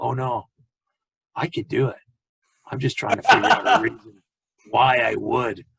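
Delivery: scratchy, rasping voice. Retelling a man's reply after being asked if he can't do it, scratchy Clint Eastwood voice. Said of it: "scratchy voice".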